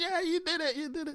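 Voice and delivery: very high, proud cheering.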